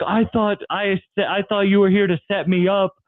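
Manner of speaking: high-pitched, tearful words broken by sobs. Retelling how a man with a gun spoke while imitating someone sobbing. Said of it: "And then he starts sobbing".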